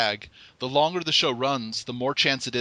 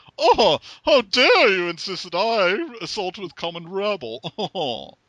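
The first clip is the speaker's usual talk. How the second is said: high, loud, projected posh voice through clenched teeth; 7 semitones higher, 5 dB louder than usual. Demonstrating the Blue Blood voice technique, Thurston Howell III voice through clenched teeth. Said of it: "keep your teeth together while you're talking".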